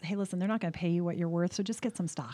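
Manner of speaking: usual speaking voice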